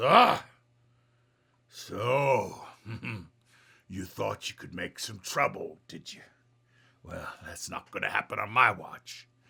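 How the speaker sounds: hefty, heavyset brute devil voice. Narrating a scene to players as a heavyset devil confronts them, heavyset devil's voice. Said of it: "the the heavy set devil looks at you and says".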